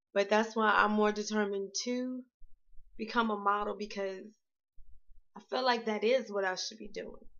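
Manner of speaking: teary voice, on the verge of tears. Speaker explaining why they are determined, close to tears. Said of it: "I'm about to cry, I'm sorry".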